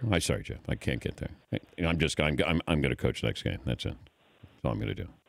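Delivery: halting, stumbling voice, cut short. Answering a question about coaching the Patriots: Bill Belichick impression. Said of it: "How did I do with my Belichick?".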